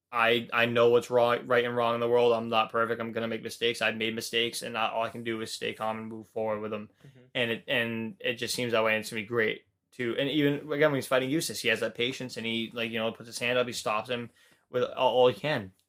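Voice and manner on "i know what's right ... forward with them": usual speaking voice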